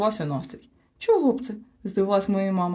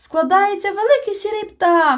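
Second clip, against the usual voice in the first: very high, loud, gleeful joyful cry; 11 semitones higher, 7 dB louder than usual. Narrator voicing a character as the family works a puzzle, joyful exclamation. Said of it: "радісно вигукнув мумітроль".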